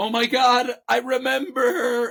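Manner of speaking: mock shrill, very high, drawn-out dawning panic. Retelling how her mother reacted when labor began, imitating someone freaking out. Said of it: "And she's like freaking out".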